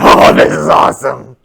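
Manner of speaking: loud, rough-edged, thrilled excited gush. Contrasting two inner reactions to monster movies: voicing lizard brain. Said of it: "the lizard brain in my head is going".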